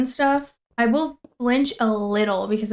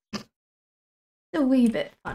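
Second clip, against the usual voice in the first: put-on British accent; 2 semitones higher than usual. While playing and scanning for mob sounds, speaker slips into a british accent. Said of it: "I need to not do a British accent".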